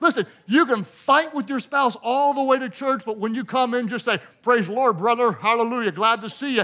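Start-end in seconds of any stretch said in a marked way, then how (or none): 4.4-6.6 fake pious, churchy friendly tone. Acting out a churchgoer hiding a fight with their spouse: fake pious greeting. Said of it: "Just learn to fake it".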